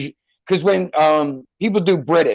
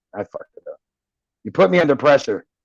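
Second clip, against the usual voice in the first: ordinary talk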